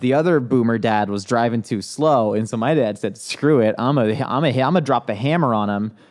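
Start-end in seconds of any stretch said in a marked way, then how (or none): none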